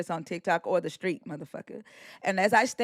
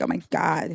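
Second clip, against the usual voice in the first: mocking, put-on exasperated tone. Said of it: "That sounds like it".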